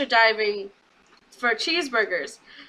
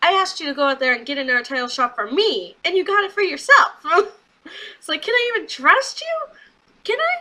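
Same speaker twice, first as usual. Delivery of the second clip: angry, reproachful, accusing tone with pitch climbing; 4 semitones higher, 3 dB louder than usual. Acting out what Bobby says to Leo after the title shot, mock-mad. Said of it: "Bobby Lashley's mad".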